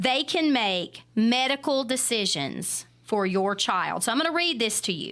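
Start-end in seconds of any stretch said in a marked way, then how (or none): 0.0-4.0 very slow, each word spaced out, deliberate. Repeating a point after being asked to say it again very slow: very slow delivery. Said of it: "Say that again very slow".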